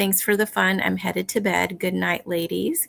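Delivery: ordinary talk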